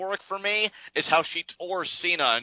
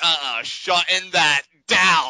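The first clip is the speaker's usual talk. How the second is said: put-on dismissive boss voice, louder; 5 dB louder than usual. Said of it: "she's like".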